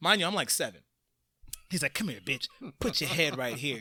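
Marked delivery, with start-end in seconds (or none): 1.9-3.8 seventies porn-movie come-on voice. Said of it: "talking to them like it was a seventies porn".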